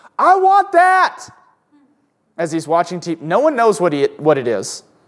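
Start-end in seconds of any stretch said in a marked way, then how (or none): 0.2-1.3 mock childlike scream, much higher, louder and slower. Recalling a baby brother watching tv commercials, imitating his scream. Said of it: "scream at the top of his lungs".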